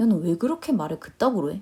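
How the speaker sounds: plain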